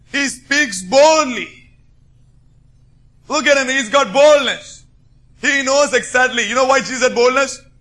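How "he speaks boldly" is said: boldly stressed, said slowly, high and loud. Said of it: "Underline the word boldly".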